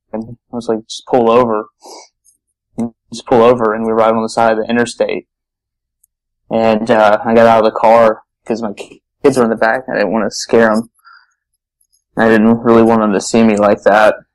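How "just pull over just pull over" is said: plain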